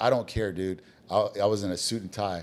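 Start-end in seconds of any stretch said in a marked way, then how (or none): none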